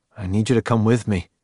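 ordinary talk

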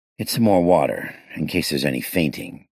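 ordinary delivery

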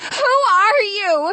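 insistent, urgent, high, demanding tone. Hannah faces a moving shadow that calls her name: demanding. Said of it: "She demanded".

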